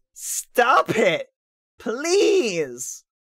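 earnest, imploring, begging tone. Asking the others to stop doing this: pleading. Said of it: "I'm pleading with you".

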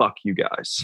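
put-on hushed whisper. Retelling pulling Bennett aside and speaking into his ear: retelling a whisper. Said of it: "And then I whispered into his ear".

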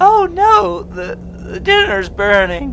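clumsy, very high put-on woman voice. Playing out a game scene himself, voicing a woman: bad put-on woman voice. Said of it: "that's not a very good woman voice".

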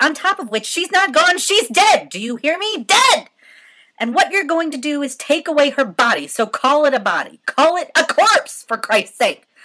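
very high, very loud, shrill, furious raging yell. A daughter shouts at the nurse about to take her dead mother away. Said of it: "I shouted".

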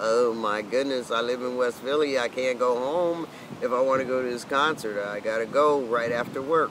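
plain

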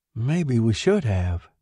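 spoken in a murmur. Narrator reads a wife's reply after her husband speaks, murmured. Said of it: "his wife murmured".

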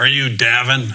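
mock loud snarling voice of a military officer. Retelling a colonel coming over to him at Camp Hansen, retelling a snarl.

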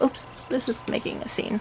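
soft, whispered aside.

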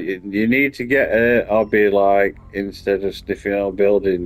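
plain

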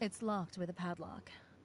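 calm, unhurried voice. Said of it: "You say that so calmly".

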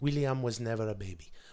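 put-on soft, sweet little Italian accent. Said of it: "in her sweet little Italian accent".

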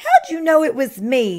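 complaining groan, high and loud. Turkey, dressed as a cow, answers Pig who recognized him, groaning. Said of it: "groaned Turkey".

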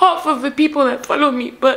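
crying, tearful weeping speech. Talking to followers on camera, crying. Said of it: "I'm crying in front of a camera".

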